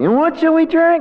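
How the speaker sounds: very high whiny moan. Speaker acting out the people's complaint about the bitter water, mock-whiny voice. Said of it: "You almost hear the whiny tone in their voices".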